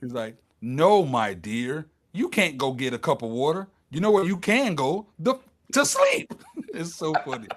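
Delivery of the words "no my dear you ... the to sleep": put-on mounting irritation, swooping, building, pitch climbing. Describing a funny scene to a listener, acting out growing aggravation. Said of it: "he gets more aggravated and aggravated".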